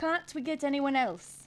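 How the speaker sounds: loud, attempted Irish accent, not quite landing. Trying again after an Irish accent fell flat, in an attempted Irish accent. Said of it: "that's kind of Irish-ish".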